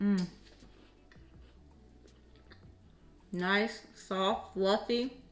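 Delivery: talking with mouth full. Tasting the breakfast just made for viewers, talking with mouth full. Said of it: "eating with my mouth full".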